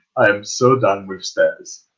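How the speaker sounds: low, grumbling mutter under the breath. Player describing his character's action as he jumps down, muttered under breath. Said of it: "under his breath he's gonna say".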